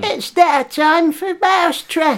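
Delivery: put-on squeaky voice. Doing an impression of a comedian game show host: squeaky Joe Pasquale voice. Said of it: "he's got a squeaky voice".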